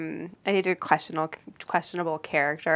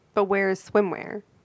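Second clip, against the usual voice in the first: normal talking voice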